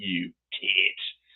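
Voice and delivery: loose, vague, put-on British accent. Showing how they call a friend a tit: vague British accent. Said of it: "always with that vague British accent".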